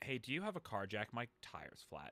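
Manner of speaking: hushed, very quiet, trembling, shaky panicked voice. Retelling a panicked phone call asking a friend for a car jack: imitating own shaky panicked voice. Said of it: "I'm, like, shaking, like".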